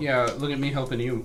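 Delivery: plain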